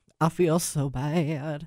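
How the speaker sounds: very slow Southern drawl, "bad" stretched long. Retelling what a crying station manager said: imitating a Southern accent. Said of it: "She did have that accent".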